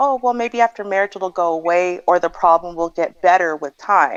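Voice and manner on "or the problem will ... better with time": normal talking voice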